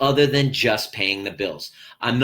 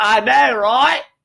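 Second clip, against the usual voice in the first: exaggerated bad Australian accent, very high and loud; 9 semitones higher, 6 dB louder than usual. Quoting a client's reply during an interview, imitating Belinda Carusi's Aussie accent. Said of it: "that's a bad Aussie accent".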